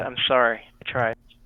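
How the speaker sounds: quiet mutter, said under the breath. Speaking as a character after banishing the Minotaur: said under the breath. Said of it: "I'm gonna say under my breath".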